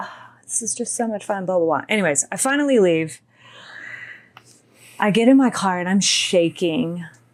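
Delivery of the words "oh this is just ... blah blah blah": quick, whispered delivery. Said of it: "And he's like".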